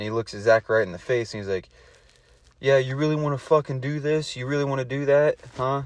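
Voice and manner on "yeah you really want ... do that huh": play-acted confrontational, threatening, hostile anger. Retelling how Connor stormed in to fight: imitating an angry challenge. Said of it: "Connor storms in".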